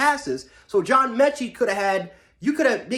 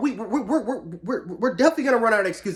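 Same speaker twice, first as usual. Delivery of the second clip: angry, stammering speech with repeated stuttering. Talking about the team after a win, the speaker stutters angrily. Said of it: "I'm stuttering because I'm def- I'm pissed off".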